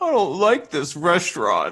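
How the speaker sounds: mock sulky, pouty little-child voice, high sing-song. Retelling how Vasilis acts at a restaurant: imitating Vasilis being pouty. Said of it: "He gets, like, real pouty".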